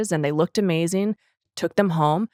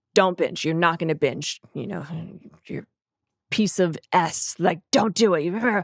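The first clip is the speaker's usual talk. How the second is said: imitated mean voice. Recalling the inner voice from years ago: retelling the mean inner voice. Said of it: "the mean voice".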